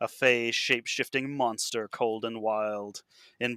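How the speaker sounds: ordinary delivery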